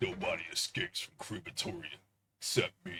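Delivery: cheesy action-hero movie trailer voice. Joking about a movie prison escape: Vin Diesel impression. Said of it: "that's my Vin Diesel impression".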